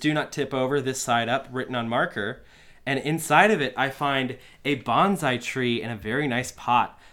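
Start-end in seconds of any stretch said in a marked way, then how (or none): none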